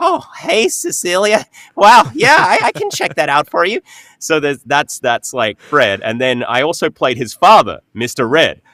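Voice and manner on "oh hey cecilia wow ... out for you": very high nerdy voice, swooping, cracking a little. Showing the voice done for a nerdy tech wizard character: nerdy voice, cracking a little. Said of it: "cracked up my voice a little bit".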